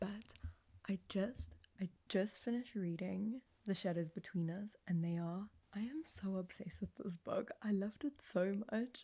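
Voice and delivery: soft hushed whisper. Vlogging past midnight, trying not to wake their sister: whispering. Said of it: "I'm whispering because I don't want to wake my sister up".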